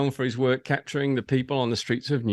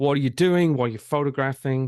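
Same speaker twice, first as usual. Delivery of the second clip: voice raised, just short of a shout; 3 dB louder than usual. Retelling how a man came over and questioned you, retelling a raised voice. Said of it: "raised voice".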